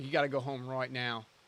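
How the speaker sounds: put-on Australian accent. Recalling a video, imitating someone in an Australian-sounding put-on accent. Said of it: "Why is he Australian?".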